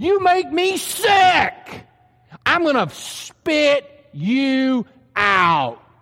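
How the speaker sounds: slow, furious, seething delivery.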